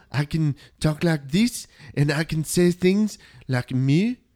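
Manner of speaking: speaking with a French accent. Showing the others a French accent after being asked to try: French accent. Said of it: "I can speak with a French accent".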